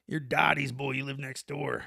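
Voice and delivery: put-on growly voice. Recalling how the man next door greeted them, doing his growly voice imitation. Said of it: "he talked with that growl".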